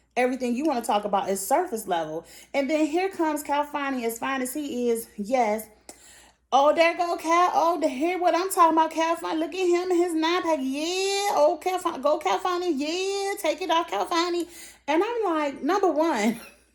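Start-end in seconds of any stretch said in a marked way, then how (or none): 6.5-14.5 mock drunk voice, higher and louder. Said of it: "You sound drunk and like an idiot".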